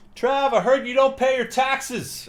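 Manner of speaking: put-on, very high, drawn-out heckling yell. The speaker recounts a fan in the upper deck heckling him, retelling a fan's yell. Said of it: "He's yelling".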